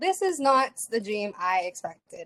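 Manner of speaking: ordinary talk, nothing marked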